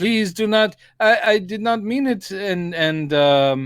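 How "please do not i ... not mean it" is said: high, put-on French accent. Retelling a film scene where an old man pleads: imitating a french accent. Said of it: "He's speaking in a French accent".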